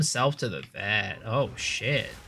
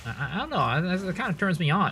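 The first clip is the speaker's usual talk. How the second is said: ordinary talk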